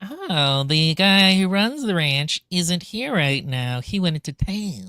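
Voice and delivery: sinister, slow, evil villain voice. Retelling two characters meeting visitors at a ranch, in a mock-evil voice. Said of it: "They have such evil voices".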